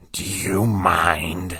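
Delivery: croaking creature voice with "mind" stretched long. Reading a story aloud, an unseen voice speaks to the narrator: croaking voice. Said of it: "a voice croaked".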